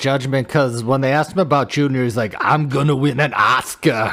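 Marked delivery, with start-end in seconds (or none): 2.4-4.1 slow and deliberate delivery. Quoting what he said when asked about Junior, doing an Arnold impression. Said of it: "that's my that's my Arnold".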